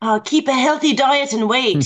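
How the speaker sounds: Scottish-accented voice. Answering a request to give it a Scottish accent, in a Scottish accent. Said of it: "Now give it a Scottish accent".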